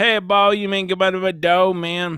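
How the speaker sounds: exaggerated French Louisiana accent. Show how a YouTube cooking guy talks, in Stale Cracker's French Louisiana accent. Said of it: "like a French Louisiana accent".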